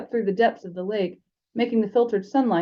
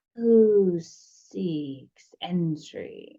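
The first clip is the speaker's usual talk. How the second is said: reedy, thin, hissing snake voice; 3 semitones lower than usual. Narrator voicing a snake's head asking a student to identify himself, thin hissing snake voice. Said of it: "The snake's head said in a thin, hissing voice".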